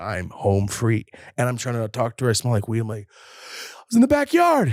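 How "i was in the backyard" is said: mock panicked voice, very high and very slow. Retelling trying to talk to her smelling like weed: imitating own panicked voice. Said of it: "I'm panicking".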